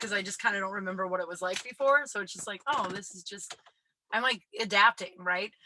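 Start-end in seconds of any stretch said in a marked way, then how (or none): none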